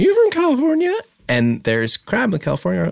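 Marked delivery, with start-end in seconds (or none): 0.0-0.9 very high-pitched woman's voice. Retelling what she said at the table: imitating her voice. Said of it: "I can't do her voice like you can".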